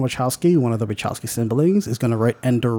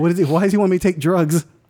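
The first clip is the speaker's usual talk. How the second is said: mock frightened child voice, higher; 4 semitones higher than usual. Imitating a nine-year-old watching the movie: imitating a scared nine-year-old. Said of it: "Nine-year-old thinking".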